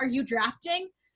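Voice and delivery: intense, pointed, near-sarcastic, acted-out delivery. Retelling how a father woke them asking about a draft: imitating an intense, almost sarcastic question. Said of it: "he was very, like, intense about it".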